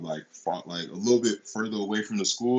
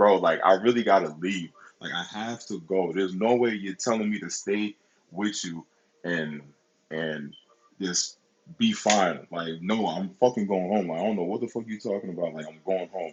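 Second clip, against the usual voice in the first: usual speaking voice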